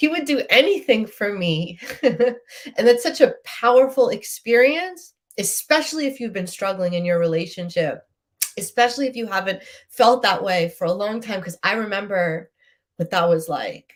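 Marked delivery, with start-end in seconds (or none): 0.0-1.8 choked up, voice catching and pitched higher. Speaking about feeling loved in a relationship, the speaker gets choked up. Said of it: "I'm getting choked up".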